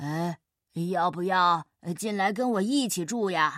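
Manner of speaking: big bear voice, very deep. Narrator reads a story where a big bear speaks to a little mouse, deep low bear voice. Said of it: "一只好大的熊用低沉的声音说".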